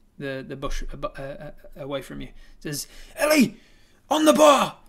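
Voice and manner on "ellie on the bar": rough, shrill shout, very high and very loud. A game narrator voices a high elf calling to someone in the bushes, shouting across. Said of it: "She shouts across to somebody".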